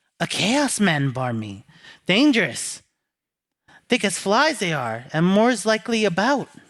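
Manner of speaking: private, confiding, cautionary tone. As Anna, warning the player about the wild-eyed man: Anna, lowered voice. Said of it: "She lowers her voice".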